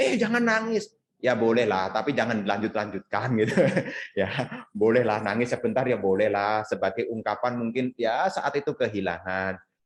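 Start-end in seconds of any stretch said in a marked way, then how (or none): 0.0-0.9 mild, high-pitched mock yell. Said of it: "ditangisi malah diteriakin".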